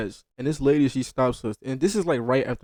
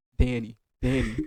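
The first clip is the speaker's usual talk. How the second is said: dead-level, flat, droning monotone. Retelling how a woman called out a name as they walked past, imitating her monotone. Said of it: "she was like talking in monotone".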